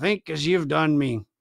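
speaking in a murmur. Narrator reads Silver speaking to Ben, murmuring. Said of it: "murmured Silver".

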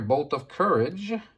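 ordinary delivery

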